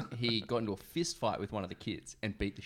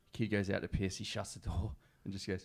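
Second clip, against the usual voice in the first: ordinary talk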